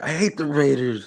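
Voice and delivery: mock sobbing child voice, high, slow, drawn-out blubbering. Retelling a short video of a kid: imitating a crying kid. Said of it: "he's crying hella bad".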